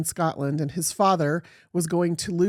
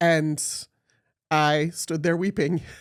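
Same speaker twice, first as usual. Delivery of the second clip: ordinary talk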